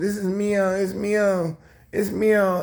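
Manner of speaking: very slow, high, drawn-out tearful sobbing. Retelling a story about her, the speaker imitates someone crying. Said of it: "but she just started crying".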